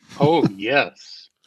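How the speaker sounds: dry, insincere sarcastic tone. Answering whether anyone cares about the news item: sarcastic tone. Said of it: "I sense that sarcasm in your voice".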